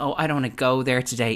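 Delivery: evasive, dodging tone brushing things aside. Imitating a reality show cast member evading a topic: imitating her evasive manner. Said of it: "kind of going".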